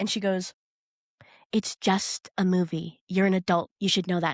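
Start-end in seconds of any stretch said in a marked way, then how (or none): 1.5-4.3 put-on, whispered, celebrity-style voice. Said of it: "The way she whispers it".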